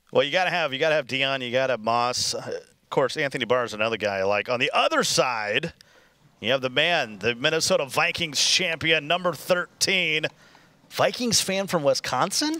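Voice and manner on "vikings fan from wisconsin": puzzled rising tune at the end on "Wisconsin". Introducing a player to a co-commentator: questioning rising tone. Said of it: "You said that with a question mark".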